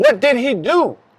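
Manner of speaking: high, emotional, screamed voice. Retelling mom yelling from the car window at the officer, imitating mom screaming. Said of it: "she's screaming".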